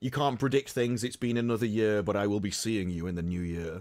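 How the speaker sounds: put-on creepy, eerie, unsettling tone. Quoting the voice actor of the guy with the suitcase: imitating a creepy tone. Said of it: "In his creepy tone".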